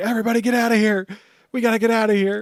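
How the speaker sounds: loud yelling, high and urgent. Retelling characters telling everyone to flee a rampage: imitating someone shouting. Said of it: "shouting, like".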